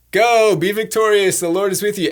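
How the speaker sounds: mock-sarcastic delivery. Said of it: "the most sarcastic".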